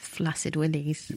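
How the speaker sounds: whispering. Chatting on a podcast about odd crushes, whispering. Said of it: "You're just whispering flaccid willies".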